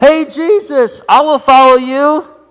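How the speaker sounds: very high, very loud, drawn-out calling out. Retelling a man by the road calling out to jesus: imitating someone yelling out. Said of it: "yelled out".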